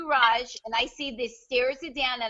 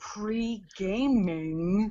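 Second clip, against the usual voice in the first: patronising, condescending, talking-down tone; 4 semitones lower than usual. Retelling how he explained a word, the speaker mimics a condescending tone.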